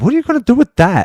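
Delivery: very high-pitched, offhand and unbothered delivery. Retelling a big man eyeing the bat: imitating a nonchalant reply. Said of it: "all nonchalantly".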